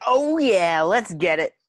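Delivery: loud, drawn-out, forced fake enthusiasm. Asked to go back to his enthusiastic self, the speaker turns on put-on enthusiasm. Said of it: "We need to go back to the enthusiastic self".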